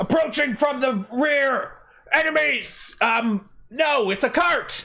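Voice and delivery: very high-pitched, drawn-out shouting. Voicing guards on the ramparts who spot a cart approaching: guards shouting a warning. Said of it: "shout out".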